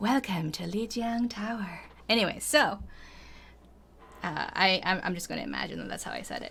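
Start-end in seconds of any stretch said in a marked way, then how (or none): 0.0-1.8 put-on game announcer voice, somewhat quieter. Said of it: "in the Overwatch lady voice".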